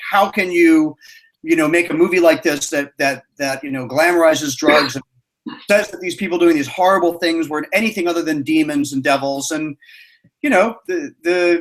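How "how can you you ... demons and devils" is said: normal talking voice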